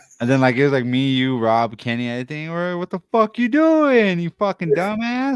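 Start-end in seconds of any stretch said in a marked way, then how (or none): 2.8-5.4 mock, very high, swooping, heated, angry outburst. Retelling own words to the bus driver: imitating oneself cursing someone out. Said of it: "I'm just talking mad shit".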